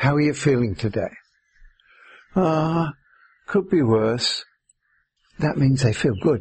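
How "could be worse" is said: grudging, glum, complaining grumbling tone. Showing how people in England answer when asked how they feel, complaining tone. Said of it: "it's the tone of voice".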